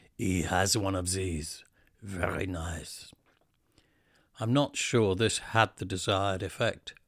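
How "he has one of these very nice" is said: put-on heavy French accent. Retelling what a shop tailor said about a jumper: heavy French accent. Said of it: "with a heavy French accent he said".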